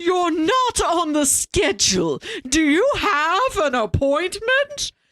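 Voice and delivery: high-pitched, cartoonish receptionist voice. Imitating a receptionist from a movie: imitating cartoon character talk. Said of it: "everybody in the movie talks like a cartoon character".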